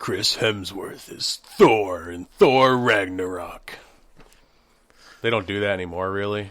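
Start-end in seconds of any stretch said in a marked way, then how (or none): 0.0-3.8 very slow movie-trailer narrator voiceover delivery. Discussing old movie trailers, demonstrating the style in a movie trailer voiceover voice. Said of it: "like if you're doing like a like a trailer for a movie".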